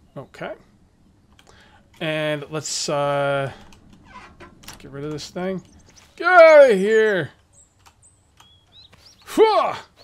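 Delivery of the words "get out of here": very loud, shrill yell. Sorting items in a game, the streamer yells at a locker. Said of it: "I don't know why I'm yelling at a locker".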